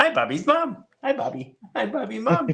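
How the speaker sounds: very high, mocking, teasing voice. Retelling how one guy makes fun of Bobby Lee: imitating a Bobby Lee impression. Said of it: "his Chinese impression. He quite often it'll be, uh, be like his Bobby".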